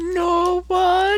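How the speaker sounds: thin, very high, piping falsetto. Answering a voice shouting who's there, quiet, high voice. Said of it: "quietly and in a high voice".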